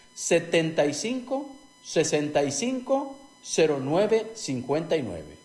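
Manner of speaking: slow, careful repetition. An advertiser repeats the phone number more slowly. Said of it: "Lo repito más despacio".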